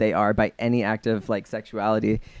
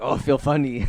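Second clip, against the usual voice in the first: simple, primitive caveman voice; 3 semitones higher than usual. Joking about the first person to drink wine, caveman voice. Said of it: "the caveman was like".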